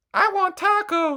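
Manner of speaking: very high, loud, squeaky cartoon voice. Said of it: "Gurr from Invader Zim who's like".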